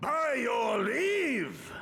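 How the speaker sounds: very big, booming, thunderous call. A character calls out to those present with a booming voice. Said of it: "that voice could fell a gigas".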